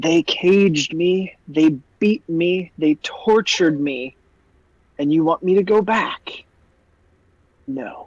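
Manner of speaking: slow, sibilant, hissing dragon voice. Narrator voicing a baby dragon answering a player, in a hissing draconic voice. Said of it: "in this hissing draconic voice".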